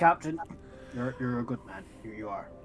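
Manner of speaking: deep, soft, disappointed sighing tone. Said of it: "with a deep, disappointed sigh".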